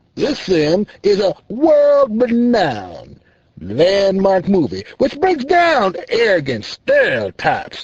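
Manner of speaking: condescending, arrogant, haughty talking-down tone. A self-proclaimed honorable senator now speaks, arrogant and disrespectful. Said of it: "The self-proclaimed honorable, disrespectful, arrogant senator now speaks. / The disrespectful, arrogant senator speaks. Now, I gather by your condemning judgment you are not too fond of or in favor o".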